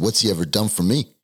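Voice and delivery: acted-out scream, yelling. Speaker recounting screaming at his mom after she picked him up, retelling a scream. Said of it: "And I screamed at her".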